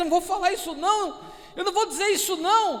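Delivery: high, fast, scared and reluctant blurted delivery.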